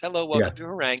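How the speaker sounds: mock calm automated announcement voice. Retelling an alien's greeting as an automated response: imitating a calm automated response. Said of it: "the automated response".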